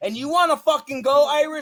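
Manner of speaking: high, furious, angry shouting outburst.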